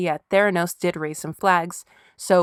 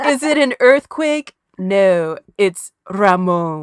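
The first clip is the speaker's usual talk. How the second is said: loud, big, very slow, drawn-out delivery; 6 dB louder than usual. Quoting a favorite line from Romy and Michelle: Mira Sorvino voice. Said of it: "my favorite line from Romy and Michelle".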